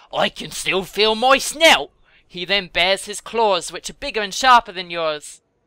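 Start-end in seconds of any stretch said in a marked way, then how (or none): 0.1-1.9 growled, grumbling bear voice. Narrating the story, the tricked bear answers, growling. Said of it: "He growls".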